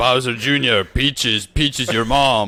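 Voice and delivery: put-on gruff villain voice. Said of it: "I like the way you did it".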